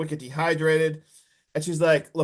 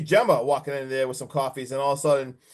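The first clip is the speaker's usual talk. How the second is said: usual speaking voice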